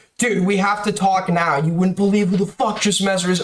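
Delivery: mock, high, half-shouted mild yell. Retelling making an excuse to get away from a man, retelling a loud scream. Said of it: "And I just scream really loudly".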